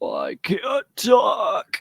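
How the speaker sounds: deepest, raspiest put-on cat voice. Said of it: "the deepest, raspiest, like, [name] meow".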